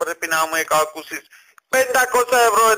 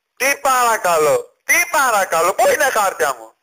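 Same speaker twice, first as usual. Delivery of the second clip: irate, exasperated, indignant, angry delivery; 2 semitones higher than usual. Demanding their papers from an office on the phone: shouting angrily. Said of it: "τι φωνάζετε".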